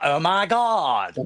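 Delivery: put-on, full Valley Girl accent. Imitating how americans were thought to talk: valley girl accent. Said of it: "It was like the Valley Girl accent".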